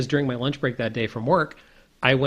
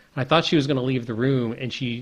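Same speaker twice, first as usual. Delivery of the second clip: usual speaking voice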